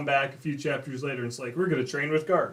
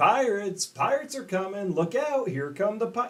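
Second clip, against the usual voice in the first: high, hammy, unconvincing fake yelling, acted out; 7 semitones higher than usual. Imitating a character yelling through town like it's an act: Usopp yelling unconvincingly. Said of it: "running through town yelling".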